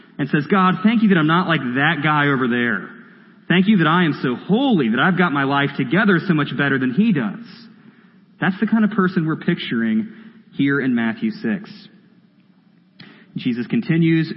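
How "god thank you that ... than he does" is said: ordinary delivery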